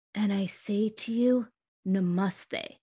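very slow, hushed, grave and solemn dead-serious delivery. Recalling what a teacher would say at the end of class, mock very serious, grave tone. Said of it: "say with this very serious, grave tone".

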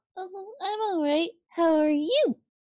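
sunny, cheerful, upbeat tone. Answering a greeting and asking back how the other is: cheerful. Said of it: "you sound very cheerful today".

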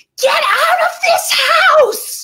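mock shrill, very high-pitched screaming. A parent recalls screaming at the children to go outside; retelling a scream. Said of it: "I just turned and I screamed".

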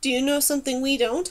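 plain

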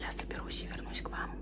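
very quiet, hushed whispered aside. Talking to viewers while someone nearby has an interview, whispering. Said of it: "поэтому я разговариваю с вами шепотом".

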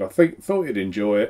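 plain

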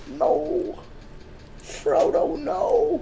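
soft, high-pitched pleading. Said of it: "Okay then, Sam".

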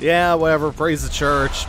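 put-on high, slurred, sloppy drunken sarcastic dismissive tone. Describing how a guy sounds: mock-drunk, sarcastic. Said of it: "He sounds drunk and sarcastic".

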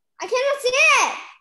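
loud, high-pitched shout. Speaker answering the other person's question, shouting. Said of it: "don't scream".

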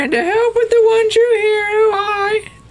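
put-on high, shrieking, annoying old voice, pitched way up. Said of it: "such an annoying voice for a character".

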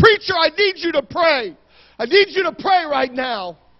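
desperate, frantic, full-volume scream. A pastor acts out a stranger screaming at him over the phone, imitating screaming at full volume. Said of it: "He's screaming at the top of his lungs".

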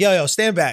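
ordinary talk, nothing marked

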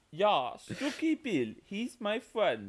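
exaggerated fake German accent. Told the earlier attempt needed work, the speaker tries again: bad German accent. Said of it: "your German accent needs work".

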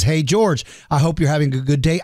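normal talking voice

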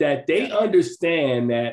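usual speaking voice

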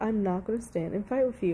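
usual speaking voice

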